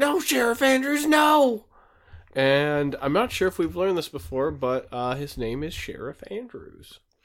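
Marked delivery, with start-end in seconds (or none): 0.0-1.7 high-pitched, loud, desperate, pleading scream. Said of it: "as he screams".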